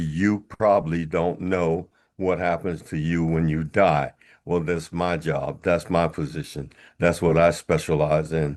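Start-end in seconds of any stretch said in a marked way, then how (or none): none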